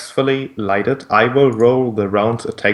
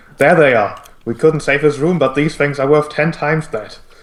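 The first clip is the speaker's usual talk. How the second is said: high-pitched shouted call, yelled out; 5 semitones higher, 3 dB louder than usual. Voicing a guard who spots the party: guard shouting. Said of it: "one of the guards shouting out".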